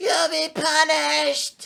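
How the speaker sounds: very high, shrill, creaky, rasping movie-character voice. Speaker quoting a line from the movie being discussed, imitating a movie character's voice. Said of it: "You do that voice perfect".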